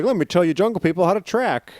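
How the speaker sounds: mock smug, condescending voice.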